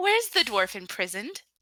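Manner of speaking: sugary sweet put-on character voice. Roleplaying as Myra, the speaker redoes the question, asking very sweetly. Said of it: "my [name] was coming out".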